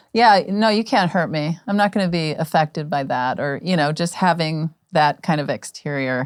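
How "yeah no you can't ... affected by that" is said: ordinary talk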